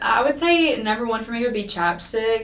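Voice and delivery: ordinary talk, nothing marked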